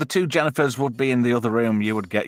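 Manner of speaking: plain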